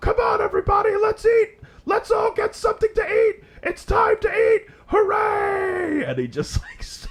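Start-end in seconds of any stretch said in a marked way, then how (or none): 0.0-6.0 frantic, very high, shrill, manic ranting yell. Telling of a man ranting at his staff, retelling a man's screaming. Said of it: "he starts screaming".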